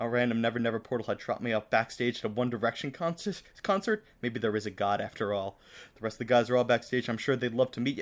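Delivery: ordinary delivery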